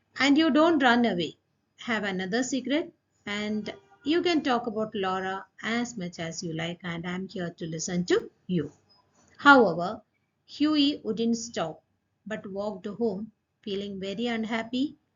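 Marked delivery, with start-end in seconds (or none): none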